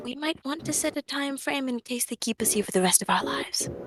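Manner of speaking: hushed, half-whispered stage whisper aside. A player speaks in character as Ragnar to the party, half-whispering. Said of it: "I'm gonna whisper".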